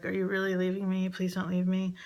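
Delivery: mock frightened, fast, begging pleading tone. Retelling what he would say after waking from a nightmare, imitating a scared voice. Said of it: "he would say in this like scared voice".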